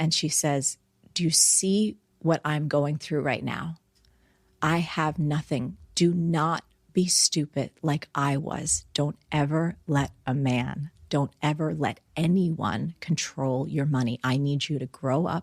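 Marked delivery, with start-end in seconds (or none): 1.1-15.4 put-on tearful voice, in tears. Retelling what mom said while shaking the speaker: imitating mom in tears. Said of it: "the tears running down her face".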